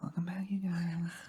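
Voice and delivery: soft, high-pitched librarian-like voice. Co-host mimics how Michael E just sounded: imitating Michael E's librarian voice. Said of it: "you sounded like a librarian for a second".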